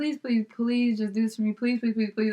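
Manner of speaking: pleading, begging over and over. Retelling a request from a friend, imitating someone begging. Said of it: "I was begging or something".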